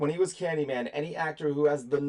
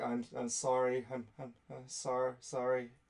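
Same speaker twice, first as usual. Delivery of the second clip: put-on dazed zombie voice, quieter; 3 semitones lower, 8 dB quieter than usual. Retelling a film scene, acting out the first zombie: imitating a dazed zombie.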